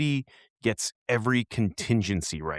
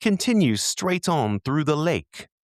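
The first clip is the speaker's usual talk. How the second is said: sweet, small British sat-nav-style voice, pitched up; 7 semitones higher, 3 dB louder than usual. Recalling an old TomTom that seemed evil, quoting it: TomTom's cute British voice. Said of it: "in its cute little British voice".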